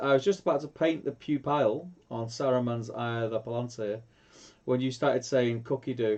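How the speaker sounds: ordinary talk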